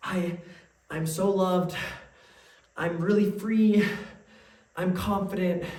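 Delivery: acted hesitant, half-hearted, powerless delivery, slow and weak. Retelling how someone showed their affirmations when asked, imitating weak, unconvincing affirmations. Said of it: "that's pretty weak".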